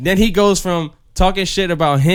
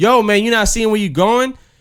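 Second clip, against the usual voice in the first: irritated, angry voice, pitched up; 6 semitones higher than usual. Retelling a man on the train snapping at someone: imitating an angry man. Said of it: "so he gets tight".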